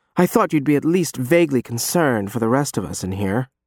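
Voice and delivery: plain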